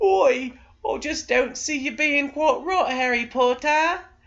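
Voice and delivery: very high-pitched, put-on British accent. Imagining an American actor told to play a British role: American doing a British accent. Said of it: "told him to do a British accent".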